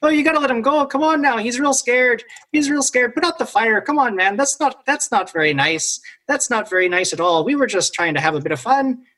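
jittery, skittish nervous creature voice, all nerves. A game master voices a creature looking down at the players; nervous creature voice. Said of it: "but he's hopping nervously from branch to branch and he's looking down at you guys and he keeps saying".

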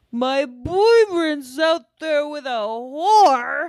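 put-on high, sloppy drunk slurring. Recapping a flashback montage of a woman being wasted, imitating drunken slurring. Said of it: "she's slurring so bad".

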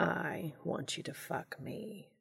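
hushed, very drawn out, slow, each word placed. Castiel speaking to Dean, slowly and deliberately. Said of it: "Castiel said slowly, deliberately".

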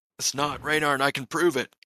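shouting. Defending someone in a tense scene: yelling. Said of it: "I'm yelling that".

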